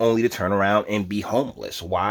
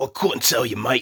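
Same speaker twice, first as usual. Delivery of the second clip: put-on Australian accent. Answering a question about a New York Post story, in an Australian accent. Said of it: "I'm doing Australian again".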